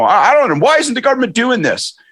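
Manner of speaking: mock pissed-off, indignant, very high ranting voice. Retelling how Doug Ford talks on the stump: imitating Doug Ford pissed off. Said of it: "he's all pissed off".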